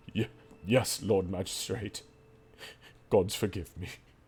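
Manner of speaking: tearful sobbing knight. Voicing a knight led off in disgrace: weeping knight voice. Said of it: "as if he's weeping".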